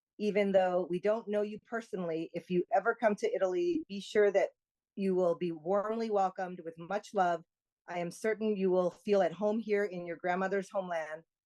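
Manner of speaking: ordinary talk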